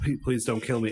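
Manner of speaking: normal talking voice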